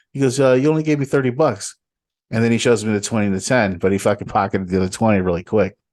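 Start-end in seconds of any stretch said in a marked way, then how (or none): 0.4-1.7 put-on New York accent, higher pitch. Retelling what a fast-talking customer said: imitating a New York accent. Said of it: "New York, like, fucking accent".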